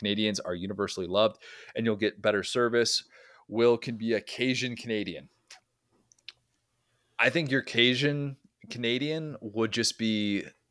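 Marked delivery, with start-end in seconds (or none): none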